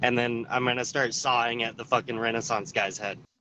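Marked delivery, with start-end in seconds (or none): none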